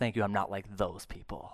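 smug, self-righteous tone. Acting out the Pharisee's prayer in the parable: imitating a self-righteous prayer. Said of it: "he struts on into the presence of God and says".

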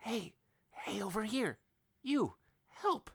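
stage whisper, pitched way up, very high. Game master voices a halfling woman calling from inside a cell, whispering. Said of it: "a halfling woman whispers from inside a cell saying".

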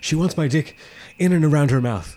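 mock panting, excited, out-of-breath blurt. Retelling a movie scene where Jonah Hill rushes up to his friends: acting out of breath. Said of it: "he's like out of breath".

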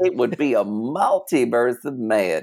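put-on cartoon character voice. Among friends, saying a line together in the Miss Minutes voice. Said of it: "We have to say it in the Miss Minutes voice".

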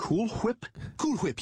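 Whip said with an exaggerated, heavy h. Repeating the product name while others question how it is said, stressing the h in 'whip'. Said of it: "putting so much emphasis on the h".

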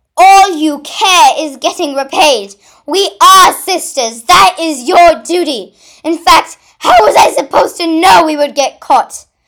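high, very loud yelling. Diamond yells back at her sister Pink Ruby in their quarrel: yelling back. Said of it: "Diamond yelled back".

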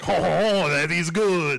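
put-on poor French-Canadian accent. Retelling a card-game scene, doing Jacques Renault's terrible French-Canadian accent. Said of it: "he has a terrible French-Canadian accent".

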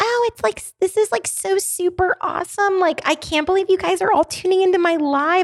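very high-pitched, gushing, chattering voice. Recalling how their voice used to sound in early videos; imitating own old high-pitched voice. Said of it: "this very like high pitched, like um almost like quiet".

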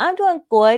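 put-on high, loud three-year-old boy voice. Retelling meeting a man's three-year-old son, imitating Donald. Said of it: "Like he talked like that".

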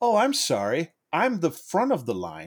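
condescending, swooping, drawn-out patronizing tone. Retelling what a lady in line said: imitating a condescending lady. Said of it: "she was real, like, condescending about it".

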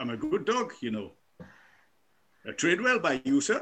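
put-on speaking with Welsh accent. A talking police dog answers its handler, in a Welsh accent. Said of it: "trained my dog to speak with a Welsh accent".

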